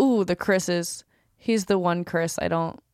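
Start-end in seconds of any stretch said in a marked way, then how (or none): none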